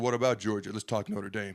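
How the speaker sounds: ordinary talk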